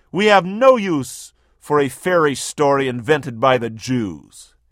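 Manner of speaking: ordinary talk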